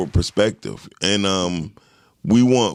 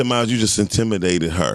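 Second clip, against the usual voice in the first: ordinary delivery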